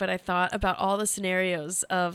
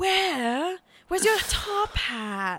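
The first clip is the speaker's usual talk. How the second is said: high, creepy, funny put-on voice. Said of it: "who speaks in a funny voice".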